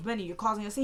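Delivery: ordinary talk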